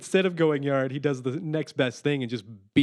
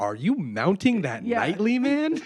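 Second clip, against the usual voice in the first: slow, pitched-up, over-enunciated, each word spelled out; 6 semitones higher than usual. Retelling Grady's question to Jesse from a movie: imitating Grady fully enunciating. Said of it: "'cause he fully enunciated".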